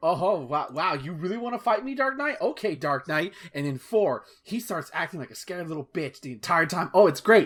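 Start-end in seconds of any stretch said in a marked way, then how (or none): 0.0-3.3 goading, mocking, taunting trash-talk jeer. Retelling how Riddler taunts as the player gets closer: imitating Riddler taunting. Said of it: "he starts talking more shit".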